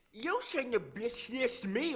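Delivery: shrill, very high, way too passionate delivery. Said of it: "Why you say it like that?".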